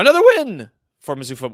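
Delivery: loud voice, breaking and cracking mid-line. Opening the show with the date and the latest win: voice cracking. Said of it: "my voice cracked when I said that".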